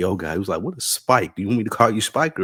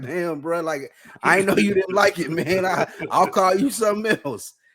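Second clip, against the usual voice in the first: startled, shocked, caught off guard, very high; 12 semitones higher than usual. Retelling the coach's reply after being yelled at: imitating a shocked coach. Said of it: "And he was shocked".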